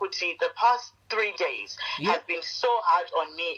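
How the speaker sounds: ordinary delivery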